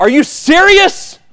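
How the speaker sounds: very high, loud, yelled-out outburst. Retelling yelling at a referee after a no-call during a game: imitating own past yell. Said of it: "I yelled out".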